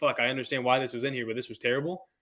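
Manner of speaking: ordinary delivery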